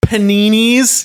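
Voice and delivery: high, slow, loud American drawl. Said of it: "He was going".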